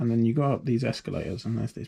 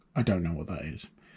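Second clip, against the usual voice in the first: put-on, low, dead flat deadpan with no reaction; 6 semitones lower, 4 dB quieter than usual. Retelling an immigration officer's reply to a man's answer, imitating a deadpan delivery. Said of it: "entirely deadpan".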